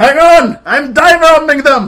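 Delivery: booming, very loud, high-pitched yell. Voicing a character who yells down while diving at enemies: yelling down in character. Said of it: "I yell down like".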